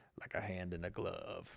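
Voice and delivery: cool, very low, hushed, slow voice. Retelling Pippen's answer on how Jordan fit: cool Scottie Pippen voice. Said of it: "In his cool Scottie Pippen voice".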